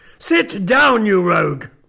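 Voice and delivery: sudden, harsh, dog-like barked delivery. An old gentleman suddenly orders his nephew to sit down, in a harsh barking voice. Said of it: "cried the old gentleman in a sudden harsh voice, like the barking of a dog".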